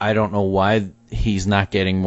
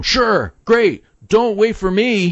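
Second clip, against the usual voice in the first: mock very high, drawn-out sarcastic holler; 13 semitones higher, 3 dB louder than usual. Quoting a character yelling at the driving line, retelling a sarcastic yell. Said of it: "he yells at them".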